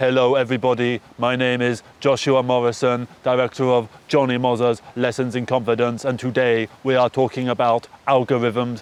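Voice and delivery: synthetic text-to-speech computer narrator delivery. Demonstrating the voice he refuses to put on for the algorithm, AI voice. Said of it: "put an A I voice, this".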